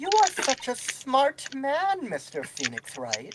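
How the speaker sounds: patronizing, condescending, high sing-song voice. Voicing a character who praises the opponent's work: condescending. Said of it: "you're saying that very condescendingly".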